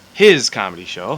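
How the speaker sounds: his leaned on, comedic emphasis.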